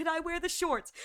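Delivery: pleading, begging voice. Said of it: "begging his father to be like".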